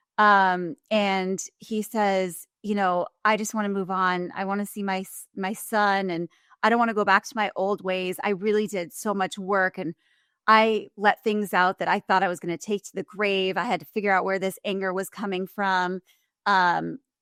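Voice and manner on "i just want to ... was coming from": usual speaking voice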